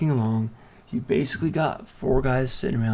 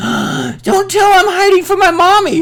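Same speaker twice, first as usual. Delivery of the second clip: put-on piercing, shrill little-girl shriek, very high and loud; 13 dB louder than usual. Narrating a hiding little girl the players come across after rolling an 8: shrieking little girl. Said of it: "And she shrieks it".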